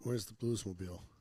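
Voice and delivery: ordinary talk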